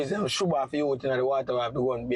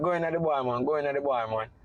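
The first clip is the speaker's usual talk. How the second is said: normal talking voice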